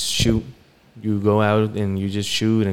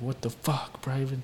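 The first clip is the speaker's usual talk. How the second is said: mock enraged, furious, super-mad outburst; 4 semitones higher, 11 dB quieter than usual. Retelling the man who found him in the shower, imitating someone super mad. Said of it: "he's like super mad".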